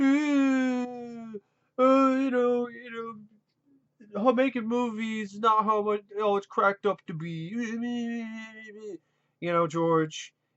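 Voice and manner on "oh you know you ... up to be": slow, drawn-out whining moan. Ranting at George, the speaker acts out him complaining: imitating George whining. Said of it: "him whining and bitching and moaning about".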